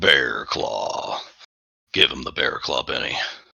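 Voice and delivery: very deep, very low, rough bear voice. A player taking a turn in a game, speaking in a deep bear voice. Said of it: "Deep voice, because bear".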